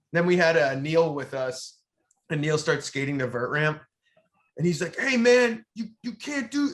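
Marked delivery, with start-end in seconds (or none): 4.9-6.7 very high-pitched put-on yelling. Retelling how a man stopped a skater at the ramp: imitating a man yelling. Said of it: "yelling at Neil".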